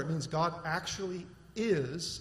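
is stressed hard and slowed a little.

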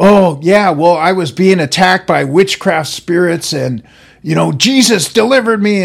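loud, sudden, uncontrolled blurt.

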